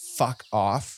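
angry, furious, through gritted teeth. Voicing a character who tells someone off: through gritted teeth. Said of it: "grits his teeth and he's like".

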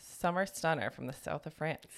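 ordinary talk, nothing marked

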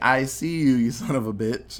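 normal talking voice

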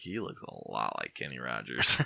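mock low, creaky voice.

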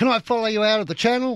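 very high, shrill, screamed-out voice. Retelling a boater's question to a passing boat: imitating someone screaming out. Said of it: "the bloke screams out".

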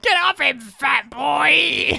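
put-on shrill crazy old-lady screech, "boy" drawn out. Retelling a film scene where an old lady screams at a kid: imitating an old lady screaming. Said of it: "crazy old lady just screaming out".

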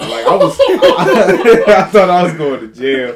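loud, slow, laughing through the words.

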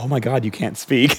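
put-on worried tone.

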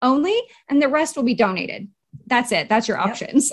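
normal talking voice

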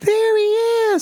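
very high-pitched voice, way up top. Retelling what Matt actually said, in Matt's high-pitched voice. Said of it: "in his high-pitched voice".

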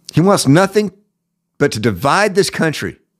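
worked-up, heated, angry outburst. Speaker ranting to a listener about a man he hates, a little heated. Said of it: "I'm sorry I got a little heated there".

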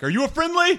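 very high, loud yelling call. Calling out to a prisoner in a jail cell: yelling in character. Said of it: "I kinda just yell at him".

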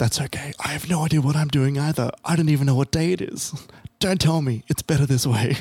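put-on whispered voice. Speaker recounts what he whispered back, retelling a whispered reply. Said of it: "He whispers back".

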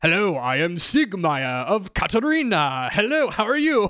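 cheerful, jolly tone. Describing a character in an image, voicing how he talks: Siegmeyer of Catarina voice. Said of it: "Like he's got like a Santa Claus energy".

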